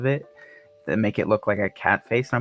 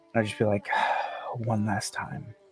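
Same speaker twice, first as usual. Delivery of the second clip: whispered under breath, much quieter; 6 dB quieter than usual. Player's character walking toward the tower, whispered under breath. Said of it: "I will whisper under my breath".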